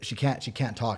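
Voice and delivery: ordinary talk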